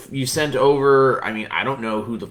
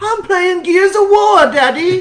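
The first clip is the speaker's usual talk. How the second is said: very high, shrill, loud mocking British accent; 7 dB louder than usual. Describing a gamer's act, the speaker mimics how he talks in a mocking imitation. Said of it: "That's what he sounds like".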